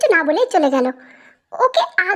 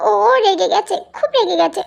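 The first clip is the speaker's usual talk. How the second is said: usual speaking voice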